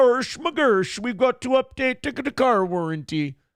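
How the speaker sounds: high-pitched, cartoonish puppet-style Swedish accent. Imitating a Swede told their car warranty is up: Swedish Chef voice. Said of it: "They all sound like the Swedish chef".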